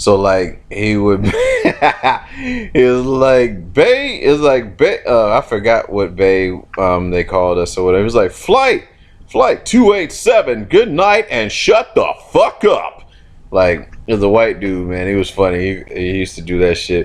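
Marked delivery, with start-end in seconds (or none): 8.3-13.1 very high, sing-song, swooping intercom announcer voice. Recalling a funny guy's sign-off, imitating his announcer voice. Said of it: "he had like an, an announcer voice".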